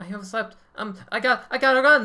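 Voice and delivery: squeaky, very high, loud little mouse voice. Speaker puts on a voice for a line, in a high-pitched voice. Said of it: "using that high pitched voice".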